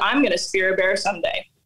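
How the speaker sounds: ordinary talk, nothing marked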